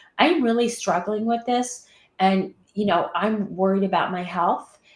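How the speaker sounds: plain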